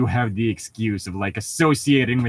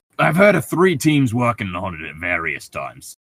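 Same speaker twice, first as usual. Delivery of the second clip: cliché, swooping, exaggerated New York accent; 3 dB louder than usual. Speaking in character while another player remarks on it: stereotypical New Yorker accent. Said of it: "like fucking stereotypical like New Yorker".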